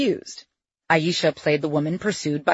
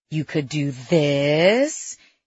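slow, condescending voice. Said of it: "His tone was so condescending".

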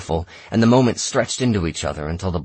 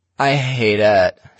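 dull, flat, lifeless deadpan voice, slightly raised; 2 semitones higher, 5 dB louder than usual. Lena answers Tom's question in front of the room, in a dull voice. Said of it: "she said in a dull voice".

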